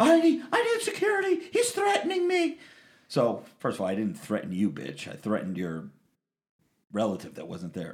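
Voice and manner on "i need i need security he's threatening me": very high, shrieking, panicky mock woman voice. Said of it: "she goes".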